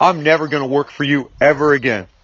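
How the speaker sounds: ordinary delivery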